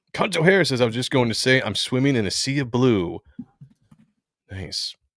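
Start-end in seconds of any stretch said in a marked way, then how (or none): none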